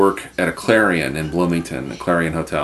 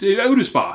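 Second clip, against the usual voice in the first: put-on thick Cockney accent, much higher; 14 semitones higher than usual. Retelling a guy repeating his question at the front desk: thick Cockney accent. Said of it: "the thickest Cockney accent".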